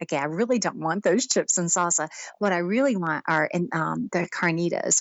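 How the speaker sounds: usual speaking voice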